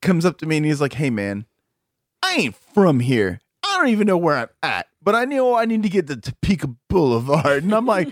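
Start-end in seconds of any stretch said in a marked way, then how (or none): 0.9-7.6 put-on drunk man voice, slurred drunken speech. Retelling what a still-wasted man said outside the jail: imitating a drunk man. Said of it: "is still fucking wasted out of his mind".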